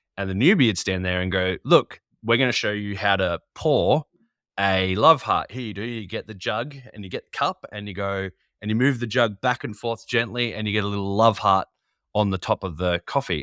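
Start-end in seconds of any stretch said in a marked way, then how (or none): none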